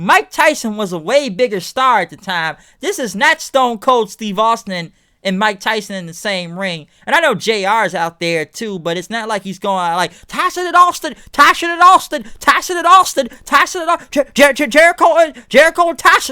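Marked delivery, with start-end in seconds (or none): 10.3-16.3 very high, loud, clumsy put-on Southern voice. Imitating a ringside announcer calling the brawl: J R impression with Southern voice. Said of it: "I can't do a good J R impression, but I'm trying to do a Southern voice".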